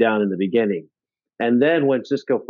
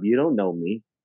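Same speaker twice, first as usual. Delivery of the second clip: put-on matter-of-fact voice. Quoting a line from an episode: matter-of-fact Odo impression. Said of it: "Odo's, like, matter of fact".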